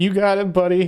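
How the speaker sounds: high, choked-up voice. A father retells answering his son at the door, retelling speaking through tears. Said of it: "And through the tears".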